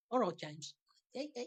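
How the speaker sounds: fake Liverpool accent. Joining in quoting the Scousers sketch: Scousers impression. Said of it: "the Scousers".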